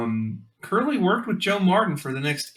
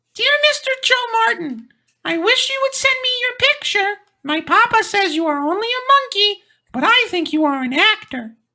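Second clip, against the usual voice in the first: put-on very high, loud little-boy voice; 7 dB louder than usual. Reading aloud a child's letter to an orangutan, in a little boy voice. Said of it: "do your best like little boy voice".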